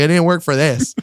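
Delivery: put-on panicked speech. Retelling being stuck in a train door: imitating panicked speech. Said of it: "I'm panicking".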